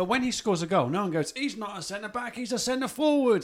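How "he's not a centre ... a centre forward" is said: higher put-on Cockney accent. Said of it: "I don't know why they're Cockney".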